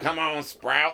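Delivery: imitated, put-on Southern accent. Retelling what another man said to him, imitating a Southern accent. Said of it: "I'm making him sound Southern".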